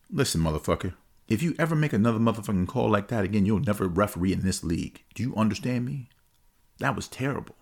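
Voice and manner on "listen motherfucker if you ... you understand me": hushed, stage-style half-whisper. Retelling a coach's threat to a referee: imitating a coach half-whispering threats. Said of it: "He starts whispering a little bit".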